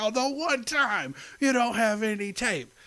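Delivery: very high raccoon voice, pitched way up. Retelling a conversation with Rocket, in Rocket voice. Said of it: "sounded just like Bradley Cooper's Rocket".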